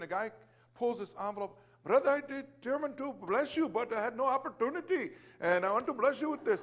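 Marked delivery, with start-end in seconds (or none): 1.8-6.6 poor put-on Indian accent, pitched up. Retelling what a man said while handing over an envelope, bad Indian accent. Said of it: "just forgive my bad accent".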